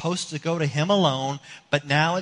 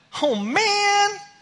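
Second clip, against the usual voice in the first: put-on very high disappointed little-girl voice, "man" drawn out; 4 dB louder than usual. Retelling a daughter's bedtime reply: imitating a daughter being a little mad. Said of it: "So she's a little mad".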